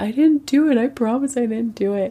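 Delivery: high, tearful, pleading, crying voice. Retelling a scene where she pleads innocence: imitating someone crying.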